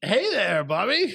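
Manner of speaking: put-on old man voice, pitched high. Reading out an emailed reply on the show, in a Bob Ryan old man voice. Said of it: "That's like an old man, old man voice".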